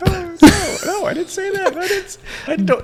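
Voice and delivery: voice shooting up to a very high pitch. Jokingly denying a remark about needing help: voice getting high. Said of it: "ignore how high my voice is getting".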